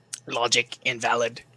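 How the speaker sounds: very deep, low, quiet monotone robotic voice. Speaker shows off the voice they talk in, robot voice. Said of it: "I talk in a robot voice".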